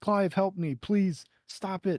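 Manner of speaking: desperate voice. Describing a game scene's inner monologue, imitating Joshua pleading. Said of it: "he's like pleading".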